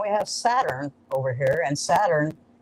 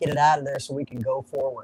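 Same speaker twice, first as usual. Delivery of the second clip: usual speaking voice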